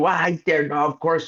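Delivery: high, furious, angry screaming outburst. Retelling how the gc reacted on the phone, retelling an angry scream. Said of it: "he's like screaming at them".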